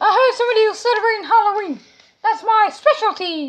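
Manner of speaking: high-pitched cartoonish voice. Playing a character in a Halloween skit: Mickey Mouse voice. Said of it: "it's Mickey Mouse".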